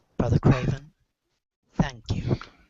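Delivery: very calm, soft, gentle voice. Playing Ulrich, hand on Brother Craven's head, thanking him: calm, gentle Ulrich voice. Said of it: "go in a very calm, gentle voice".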